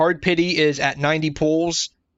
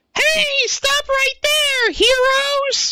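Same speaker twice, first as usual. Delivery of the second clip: put-on very high, squeaky young anime girl voice; 4 dB louder than usual. Speaker shows the voice they feared using for a young anime girl, squeaky anime girl voice. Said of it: "young squeaky anime girl territory".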